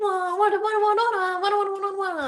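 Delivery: very high, loud gibberish fake-Italian ranting. Retelling how he yells in Italian while driving: imitating someone yelling in mock Italian. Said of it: "that's how he sounds to me when he starts yelling".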